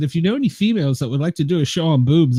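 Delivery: ordinary delivery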